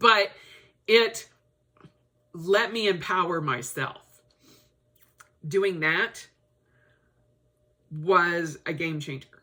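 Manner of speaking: choked-up, emotional voice. Speaker telling listeners what fighting did for them, choked up with emotion. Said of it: "I don't know why I'm getting choked up".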